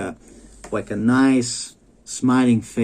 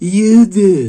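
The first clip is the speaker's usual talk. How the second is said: obnoxious, grating, shrill, very loud raised voice; 8 semitones higher, 9 dB louder than usual. Repeating a mother's retort to him, mock-obnoxious raised voice. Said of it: "The most obnoxious, voice raised, disgusting".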